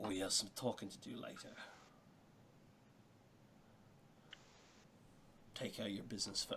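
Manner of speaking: hushed, very quiet whisper, close to the ear. A character leans close to a player's character as he leaves, whispering. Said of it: "he will whisper in your ear".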